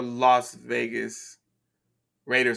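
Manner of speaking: slow, careful, deliberate enunciation, each word drawn out. Asking about a team, saying its name slow and deliberate. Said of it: "I had to say it slowly".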